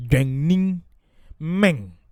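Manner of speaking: low tone on Guanyin, high tone on men. Using a two-tone pronunciation guide: low Guanyin, high men. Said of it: "with the low tone on the Guanyin and the high tone on the men".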